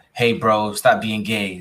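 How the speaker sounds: ordinary delivery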